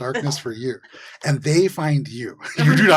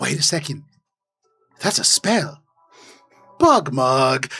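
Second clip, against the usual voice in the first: put-on goblin creature voice, in character. Voicing a goblin who notices a spell being cast: goblin voice. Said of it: "you hear over top this goblin go".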